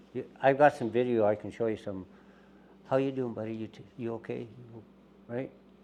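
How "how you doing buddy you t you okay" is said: hushed, low, soft voice. Recounting talking to an animal caught in a leg hold, in a low voice. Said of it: "low voice".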